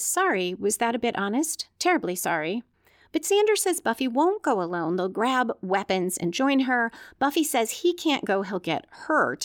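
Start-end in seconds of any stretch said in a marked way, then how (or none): none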